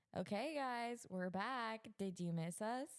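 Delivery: celebrity-style voice laying the sarcasm on thick. Trying the line again for the others, more sarcastic this time, do a sarcastic Kim Kardashian impression. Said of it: "that's Kim Kardashian".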